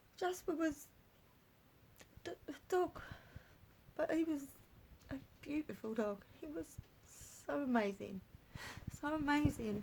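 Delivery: crying while talking. Remembering a dog lost this year, thanking him: crying while talking. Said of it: "I can't help crying if I talk about this".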